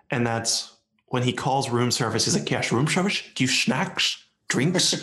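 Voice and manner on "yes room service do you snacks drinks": put-on Scottish actor voice, higher pitched. Retelling a movie scene where he calls room service: Sean Connery impression. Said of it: "Two of them are Sean Connery".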